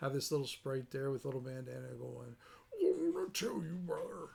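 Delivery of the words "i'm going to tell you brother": rough, creaky, raspy wrestler voice. Showing how a sprite could challenge the party: Randy Macho Man Savage imitation. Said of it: "your best Randy Macho Man Savage imitation".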